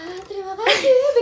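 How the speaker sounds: delicate, soft, gentle way of talking. Retelling how a friend used to talk: imitating Rili's softer voice. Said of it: "Kita tuh pernah impersonate Rili".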